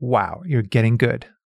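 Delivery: ordinary delivery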